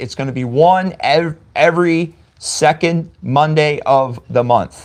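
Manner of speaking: slow, deliberate, carefully drawn-out enunciation. Announcing the podcast's release schedule to listeners, speaking slowly. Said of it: "I had to say that slow".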